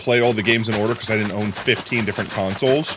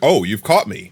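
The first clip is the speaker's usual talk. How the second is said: put-on grinning killer voice; 3 dB louder than usual. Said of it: "he looks up like".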